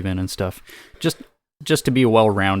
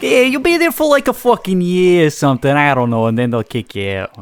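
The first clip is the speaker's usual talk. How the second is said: loud, swooping put-on New Jersey accent; 8 semitones higher, 7 dB louder than usual. Imitating the other speaker's line back: imitating a jersey accent. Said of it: "that was a little, like, Jersey".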